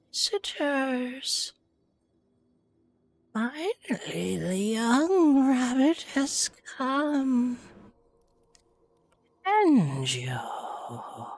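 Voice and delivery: put-on raspy, rasping scarecrow creature voice. Game master voices a scarecrow whose head just raised up, in a raspy scarecrow voice. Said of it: "you then hear a raspy voice".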